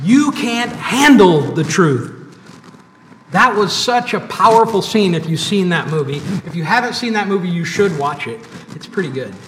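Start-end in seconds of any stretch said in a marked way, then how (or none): 0.0-2.1 slow, loud, passionate shout. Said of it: "with even more passion, shouts".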